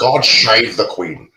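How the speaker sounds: put-on Scottish accent. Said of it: "he's double oh seven with the Scottish accent".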